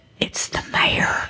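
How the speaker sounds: hushed, breathy whisper. Retelling how responders came to see her, quoting a much quieter voice. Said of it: "suddenly a much quieter voice said".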